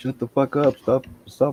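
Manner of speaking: very high, shrill, shouted yell. Acting out the dog that stands between two people joking around, imitating a dog yelling. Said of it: "starts yelling at us".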